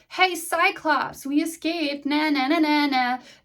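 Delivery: big, high, drawn-out hollered call. Retelling how Odysseus taunts the Cyclops while sailing away: imitating Odysseus yelling. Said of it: "Odysseus yells".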